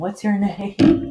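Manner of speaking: loud shouting, high-pitched. Yelling at a cat that is trying to eat the plants: yelling at the cat. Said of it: "I'm trying to yell at him".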